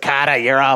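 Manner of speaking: put-on Boston accent. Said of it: "the wicked Boston accent".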